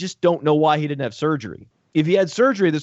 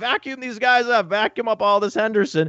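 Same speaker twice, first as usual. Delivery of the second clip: high, gushing, eager mock voice. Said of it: "I'm like".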